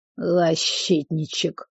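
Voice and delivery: soft word pushed out through a snort. A young man answers the cook who just threatened him, snorting. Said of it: "фыркнул парень".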